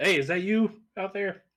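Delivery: very high-pitched, loud shouted call. Playing a character calling out to someone off the road: shouting from the cart. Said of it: "just shouted, like".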